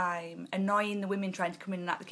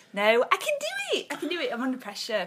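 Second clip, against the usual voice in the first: plain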